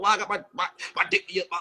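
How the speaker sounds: low, mocking, taunting mimicry. Retelling another speaker's words: mocking imitation of someone. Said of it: "You getting on here and keep talking about".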